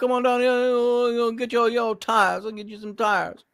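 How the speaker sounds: very high Louisiana Cajun accent, "uhs" stretched. Showing how talking Louisiana sounds: Louisiana accent. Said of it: "whenever I start talking Louisiana".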